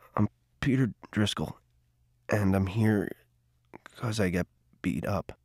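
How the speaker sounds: very quiet, low, halting, fearful mumble. Handed the feather in the circle, peter introduces himself in a fearful mumble. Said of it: "looked up fearfully and mumbled".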